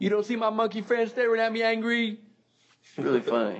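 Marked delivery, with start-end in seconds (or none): 0.0-2.2 very high-pitched, real mad, angry yelling rant. Retelling the sketch where he gets mad at guests: imitating Brian Fellows yelling angrily. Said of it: "he gets real mad at his guests".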